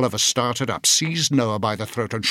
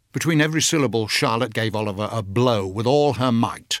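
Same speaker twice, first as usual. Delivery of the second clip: plain reading voice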